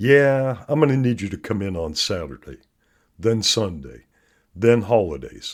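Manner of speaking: put-on laid-back, utterly relaxed, casual boss tone. Retelling a movie scene, the speaker quotes a boss to an employee, imitating a boss's relaxed voice. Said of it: "in the most relaxed voice imaginable".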